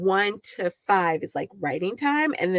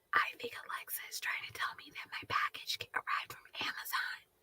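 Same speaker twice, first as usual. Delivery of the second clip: breathy, hushed whisper, barely audible. A streamer signing off whispers so her smart speaker won't start talking. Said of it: "I'm whispering so she doesn't start talking".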